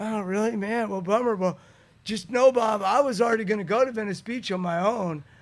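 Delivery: loud, blubbering put-on sobbing, crying voice. Retelling what he said to someone back then, imitating a crying voice. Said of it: "I'm doing that crying voice to Bob".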